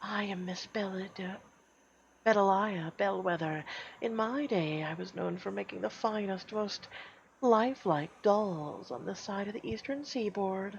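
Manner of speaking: high-pitched, raspy whisper. Reading a story where a doll maker greets visitors in the dark: rasping whisper. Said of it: "A rasping whisper cuts through the air".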